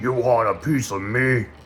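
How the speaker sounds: gentle monster ogre voice. Narrating a tabletop fight and voicing the ogre, ogre voice. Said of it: "that's the best ogre voice I could come up with".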